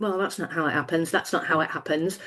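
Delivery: acted exasperated eye-roll. Describing watching a dramatized arrest, acting out her eye-rolling. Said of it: "quite a lot of eye rolling".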